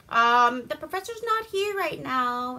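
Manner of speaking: mock old-movie English accent. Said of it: "some kind of fucked up Englishy accent".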